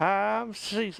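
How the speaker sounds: s sounds whistled when spoken. Imitating a bank manager from an old Western game: whistling S's. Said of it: "they whistle when they say their, like, their S's".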